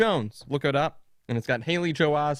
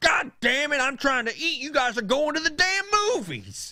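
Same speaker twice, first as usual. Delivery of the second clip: mock old man voice, hollering, very high and shrill; 11 semitones higher than usual. Retelling how grandpa reacted while the kids photographed the pizza, imitating grandpa yelling. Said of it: "he just yells at us".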